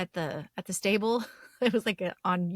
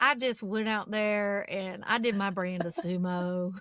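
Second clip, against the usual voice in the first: put-on Texan drawl, "sumo" drawn out. Suggesting accents to give a sumo wrestler, trying one out: texan accent. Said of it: "Or like a Texan, it'd be like".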